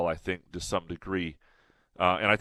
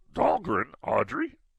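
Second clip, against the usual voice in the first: bad character voice, squeezed very high and creaky. Copying how Graham says it every night, Yoda voice. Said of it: "in his Yoda voice".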